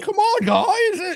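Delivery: very high voice with a hint of craziness. Imitating how a character sounds after an explosion: Gregor's crazy voice. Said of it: "you hear it in his voice".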